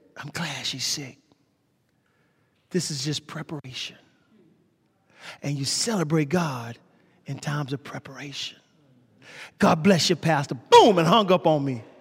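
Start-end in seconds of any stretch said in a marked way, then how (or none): 0.2-10.5 put-on raspy voice, lower and quieter. Retelling a phone call, the speaker quotes a man's words imitating a raspy voice. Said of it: "He had this raspy voice".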